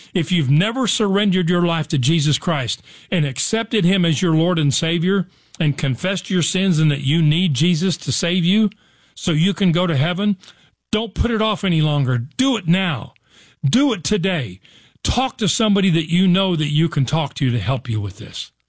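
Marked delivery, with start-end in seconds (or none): none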